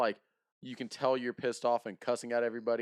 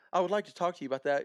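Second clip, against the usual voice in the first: put-on high, polite phone voice; 6 semitones higher than usual.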